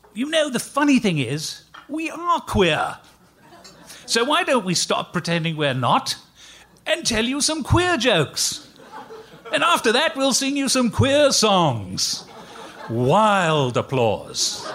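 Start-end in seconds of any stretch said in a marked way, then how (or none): 0.2-12.3 put-on English accent, pitched up. Retelling the partner picking up his guitar and addressing the audience in his best english accent. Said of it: "in his best English accent".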